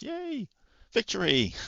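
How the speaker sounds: very high, shrill, swooping sarcastic victory whoop. Reacting to a first-round cup win in a game: sarcastic cheer. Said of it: "Being a bit sarcas-, sarcastic there".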